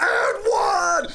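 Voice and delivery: very high, loud, screeching scream. Acting out Murray going to the ref after his finish, imitating a player screaming. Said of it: "Screaming at him".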